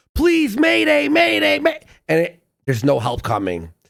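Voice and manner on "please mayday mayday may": very high, loud, panicky, panicked voice. Mocking the panic in a man's voice: imitating a panicked mayday call. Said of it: "the panic in his voice is like someone who's about to like lose oxygen".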